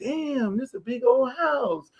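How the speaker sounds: soft, slow, put-on casual tone. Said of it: "I'm acting like, we acting like regular".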